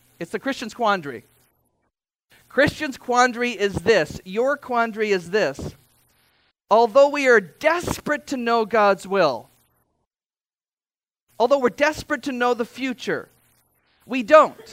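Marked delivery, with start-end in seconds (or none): 0.2-1.2 very fast delivery. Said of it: "Try saying that fourteen times fast".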